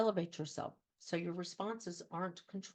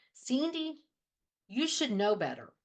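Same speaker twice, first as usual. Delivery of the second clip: put-on aggressive, loud, swooping, stern scolding tone; 6 semitones higher, 7 dB louder than usual. Explaining a fight-or-flight response, speaker mimics a second-grade teacher: imitating an aggressive teacher. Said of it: "your teacher talked very aggressively".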